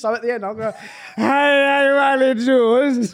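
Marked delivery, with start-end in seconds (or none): 1.2-3.1 put-on tipsy Welsh accent, very loud, very slow. Repeating the Welsh impression, acting more drunk: put-on drunk Welsh accent. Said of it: "progressively more pissed".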